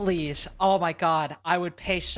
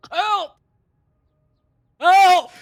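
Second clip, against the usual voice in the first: mock panicked cries, higher and louder; 13 semitones higher, 12 dB louder than usual. Reenacting the round just played: mock panicked cries for help. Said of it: "I'll reenact the round".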